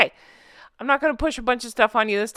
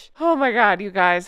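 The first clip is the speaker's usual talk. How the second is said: still laughing while talking. Book club host talking to members, laughing while talking. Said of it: "I'm still laughing".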